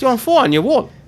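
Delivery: put-on Newcastle accent, pitched high.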